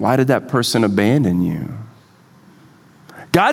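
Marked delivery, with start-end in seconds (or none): 0.0-1.7 taunting whisper, lower. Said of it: "the enemy whispers to you".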